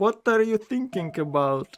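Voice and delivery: put-on thick German accent. Speaker retells the man on the radio in a german ad, heavy german accent. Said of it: "with a heavy accent".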